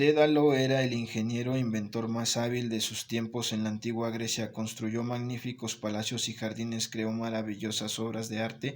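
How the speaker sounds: dull, flat, level monotone reading. Demonstrating the first part of a spanish text, flat monotone reading. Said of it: "con una lectura monótona, dice así".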